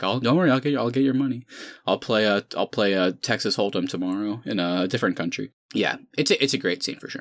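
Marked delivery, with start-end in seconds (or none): 0.0-5.5 play-acted, frightened, placating voice, bravado gone. Retelling how the villain begs after being caught: imitating scared Le Chiffre. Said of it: "He's scared".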